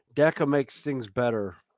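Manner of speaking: plain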